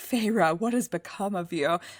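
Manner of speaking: put-on horrified tone. Retelling a character's reaction in a book, acting horrified. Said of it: "he's, like, horrified".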